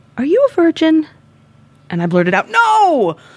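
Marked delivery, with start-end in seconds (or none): 0.1-1.0 tender, very gentle, very high voice. Telling a story, the speaker retells how he was very gently asked a question: retelling a very gentle question. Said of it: "very gently asked".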